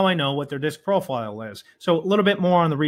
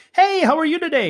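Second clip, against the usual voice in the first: put-on, mock nervous voice, pitched higher; 3 semitones lower than usual. A sales trainer mimics how most cold callers sound when nervous, pitching up and rushing; this is an imitation of a nervous high-pitched caller. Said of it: "Notice how I slow things down".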